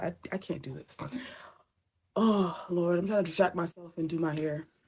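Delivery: choked-up voice on the verge of crying. Talking about family unreachable after a flood, on the verge of tears. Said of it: "I'm about to start crying again".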